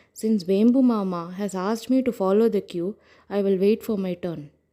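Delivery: ordinary delivery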